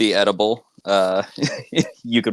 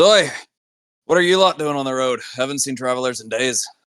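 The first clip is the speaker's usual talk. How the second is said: big, stocky, burly dwarven man's voice; 4 semitones higher than usual. Voicing a burly dwarven man greeting travelers on the road: burly dwarf voice. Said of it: "a pretty burly dwarven man turns around and he just says".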